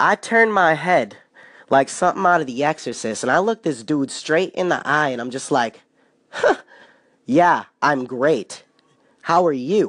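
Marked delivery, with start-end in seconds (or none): 6.3-9.9 slow, curt, snippy tone loaded with attitude. Retelling a reply to a doctor: imitating own attitude. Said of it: "This guy immediately got my attitude".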